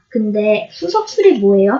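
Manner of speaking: ordinary delivery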